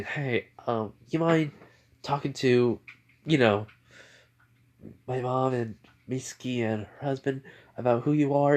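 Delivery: ordinary delivery, nothing marked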